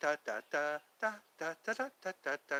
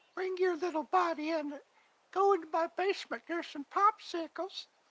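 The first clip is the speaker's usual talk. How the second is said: very high-pitched, gentle, coaxing voice; 3 dB louder than usual. Doing the brother's impression of Herbert the Pervert: soft Herbert the Pervert voice. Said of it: "he talks with a real soft voice".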